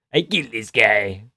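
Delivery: forced gravelly voice, spoken slowly. Mocking a fighter's way of talking: Hamzat Chimaev's forced gravelly voice. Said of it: "forced, gravelly voice he does".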